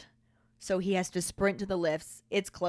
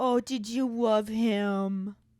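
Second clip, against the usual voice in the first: slow, mocking baby talk, "him" drawn out; 4 semitones higher than usual. Retelling what she said to Harry, in a mock baby voice. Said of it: "this is that mock baby voice that she loves to use".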